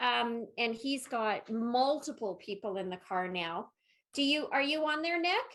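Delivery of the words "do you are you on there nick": loud, higher-pitched calling voice. Calling out to nick as if he can hear you, with a raised voice. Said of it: "I'm raising my voice".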